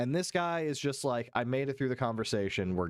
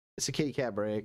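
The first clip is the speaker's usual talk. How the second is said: ordinary talk, nothing marked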